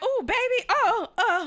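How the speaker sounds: high, loud, drawn-out laughter through the words. Retelling the girl's reaction in the bathroom: imitating someone laughing while talking. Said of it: "She laughing like".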